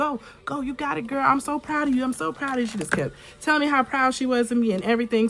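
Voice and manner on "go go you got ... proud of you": mock enthusiastic cheerleader voice, high, excited cheering. Retelling how her mom stood beside her encouraging her, imitating mom's cheering. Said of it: "she literally was my cheerleader".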